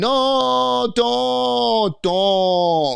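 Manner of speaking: mock very high drunken girl's scream, stretched no. Commentating a fight video, imitating a drunk woman at the door: imitating drunk girl screaming. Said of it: "is at the door screaming".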